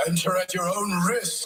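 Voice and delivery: high, spooky, eerie voice.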